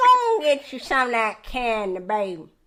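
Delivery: put-on old church lady voice. Describing a woman who keeps mints on the pew, the speaker imitates her: old church lady voice. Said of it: "you said old church lady".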